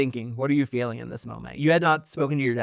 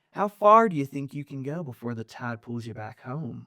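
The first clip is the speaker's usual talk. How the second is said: calm, quietly frustrated tone, quieter; 4 dB quieter than usual. Voicing a father speaking through the water: calm but frustrated voice. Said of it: "His voice is calm but laced with frustration".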